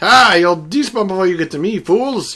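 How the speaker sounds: very loud, high-pitched, smug jeering and gloating. Playing a game and escaping creepers, gloating at them. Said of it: "to the point where I was gloating".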